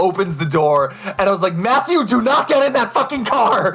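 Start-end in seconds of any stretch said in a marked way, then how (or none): 1.6-3.7 mock very high, frantic, panicked shout. Retelling warning a friend not to enter a stranger's car: imitating own panicked yell. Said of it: "had this full-blown panic attack".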